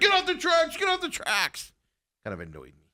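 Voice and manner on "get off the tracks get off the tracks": play-acted, very high, shrill, repeated yelling. Retelling how a security guard yelled at the crowd: imitating a guard yelling. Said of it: "this guy just starts yelling at everybody".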